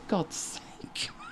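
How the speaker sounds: ordinary talk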